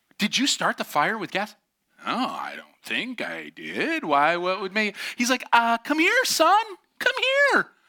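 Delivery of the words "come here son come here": very high-pitched, raised voice. Retelling how his dad called him over, imitating dad's high-pitched voice. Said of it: "my dad would get the high-pitched come here".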